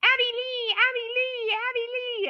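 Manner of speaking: mock, shrill, very high, drawn-out yell. Retelling a reality show scene: imitating Kathy yelling. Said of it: "she starts yelling".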